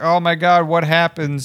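mock stunned, stretched-out cry in mild shock. Retelling how fans reacted to the show: imitating people screaming. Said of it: "Everybody was screaming, like".

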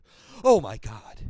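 very loud, shocked and horrified outburst. Imagining parents hearing about the blood ritual: imitating a shocked parent. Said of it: "parents going".

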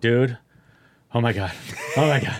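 slow, mock breathless, hyperventilating gasps for air. Retelling a friend's panicked phone call: imitating someone hyperventilating. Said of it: "He's, like, hyperventilating over the phone".

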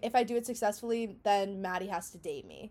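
ordinary talk, nothing marked

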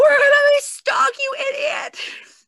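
very high, loud angry shouting. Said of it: "all of us cursed her out".

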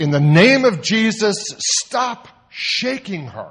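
loud high commanding shout. Retelling what they said to a girl across the foyer, loud voice. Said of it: "I said in a loud voice".

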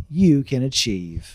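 cheerful sermon-style voice. Mocking a preacher's message that thoughts have power: Joel Osteen impression. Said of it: "That's my Joel Osteen impression".

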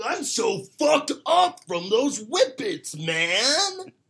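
mock very high, very loud, very slow, dazed voice. Imitating how people sound after whippets: imitating someone high on whippets. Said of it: "That's what they sound like".

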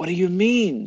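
fearful, very high. Reading a story aloud, voicing the other character's frightened reply: afraid.

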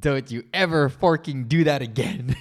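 put-on stern voice. Retelling what he told her after stopping her goodnight kiss, in a retold stern voice. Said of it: "In a way more stern voice than that".

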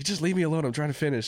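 short snappy tone. Recounting being interrupted on the rower, retelling snapping at her. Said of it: "I snapped at her".

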